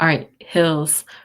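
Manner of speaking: ordinary talk, nothing marked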